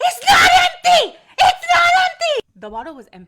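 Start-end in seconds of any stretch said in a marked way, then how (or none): 0.0-2.5 top-of-the-lungs screaming, very high, shrill, very loud. Retelling a customer's complaint at the register: imitating a customer screaming. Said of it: "She starts screaming at the top of her lungs".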